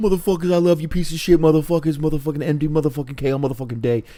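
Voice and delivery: high-pitched ranting voice. Imitating a wrestler's loving promo to the crowd: imitating Nick Gage. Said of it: "Gage would do the same thing".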